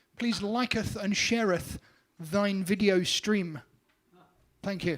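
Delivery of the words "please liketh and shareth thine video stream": put-on archaic ye olde English diction. Asking viewers to like and share: mock olde English voice. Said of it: "in my best, uh, ye olde English".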